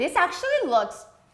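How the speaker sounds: high, loud, disbelieving surprise. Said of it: "Why do you sound so surprised?".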